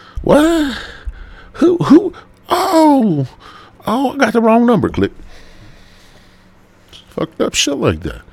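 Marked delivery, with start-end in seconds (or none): 0.2-4.8 very high, loud drawl with long stretched oh. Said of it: "he had a little drawl".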